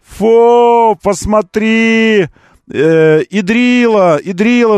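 very slow, high taunting jeer with long "фу". Describing how everyone shouts at a blogger, imitating people shouting. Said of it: "на него кричат все такие".

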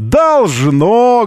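sarcastic, drawn-out "должно". Quoting a woman's reply about a transponder: mimicking an ironic 'должно'. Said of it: "вот с такой иронией в голосе".

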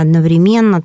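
одновременно said with stress on the syllable ме. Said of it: "составители словарей дают оба варианта".

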